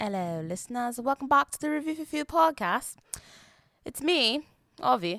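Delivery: put-on British accent. Podcast host welcoming listeners back to the show, in a put-on british accent. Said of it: "I've decided to talk in a British accent".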